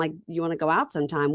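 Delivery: plain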